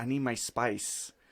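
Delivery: put-on Mexican accent. Retelling how he shooed them away at night: imitating a Mexican accent. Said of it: "Your accent".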